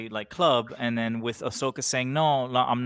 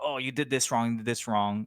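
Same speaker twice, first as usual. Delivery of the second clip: put-on stern voice; 3 dB quieter than usual. Acting out a parent who criticizes a mistake: imitating a bad-cop dad. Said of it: "the dad is, like, very, like".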